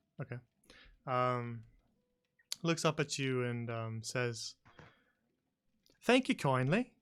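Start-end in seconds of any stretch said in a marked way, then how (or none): 6.0-6.9 bright, cheerful, chipper, pitched-up bird voice. Narrator voices a Kenku after a player offers one silver piece, in a chipper voice. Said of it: "in a rather chipper voice".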